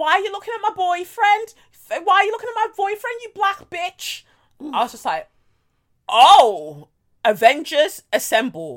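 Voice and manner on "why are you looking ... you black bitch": terrible put-on Scouse accent, very high pitched. Retelling a confrontation, quoting a drunk girl: very bad Liverpudlian accent. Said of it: "This is a very shit Liverpudlian accent".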